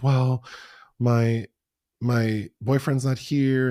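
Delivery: play-acted, high, drawn-out, panicky, overwhelmed worried voice. Retelling a story about an airport gate, imitating a panicked woman. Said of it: "And she starts panicking".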